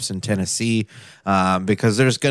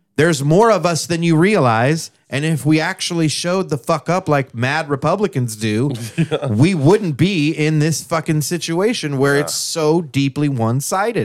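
hollering, high-pitched, raised shouting; 7 semitones higher than usual. A speaker addresses Oklahoma Democratic voters who didn't vote, yelling. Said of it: "I'm yelling at you".

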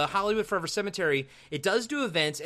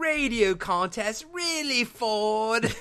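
mocking, very slow, high teasing tone, Ford stretched; 6 semitones higher than usual. Retelling how the villain teases the hero on the phone: imitating mocking tone. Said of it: "he kinda makes fun of him".

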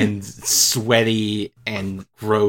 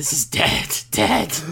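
whispered monster voice, higher at the end. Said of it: "kind of a Venom voice goes".

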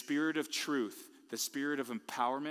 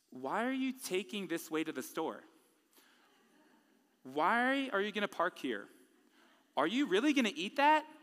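high, needling, nagging voice; 6 semitones higher than usual. Speaker acts out questions his bride admits she thinks, in a mock nagging voice. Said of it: "it's a nagging voice in my head".

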